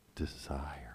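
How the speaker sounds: suggestive delivery. Showing a listener one way to say the word desire: suggestive delivery.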